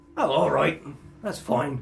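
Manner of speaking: put-on rough, creaky older man's voice. A game master voices the man behind the door answering the visitors, in an older man voice. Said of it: "It sounds like an older man".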